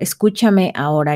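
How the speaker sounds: ordinary talk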